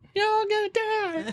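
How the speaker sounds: sweet, very high-pitched, slow, drawn-out voice. Retelling a movie villain's threat, imitating the Red Queen sweetly. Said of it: "I like how she was all nice".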